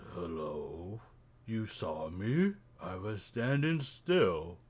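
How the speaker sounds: deep, gravelly character voice. Narrating a scene to the players, the speaker voices a character in a deep, gravelly voice. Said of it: "a deep, gravelly voice".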